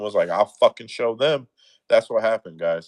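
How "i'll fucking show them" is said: cocky, spiteful, defiant, attitude-laden tone. Retelling what the referee said going out to the ring: imitating someone with an attitude. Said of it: "went out to the ring with an attitude".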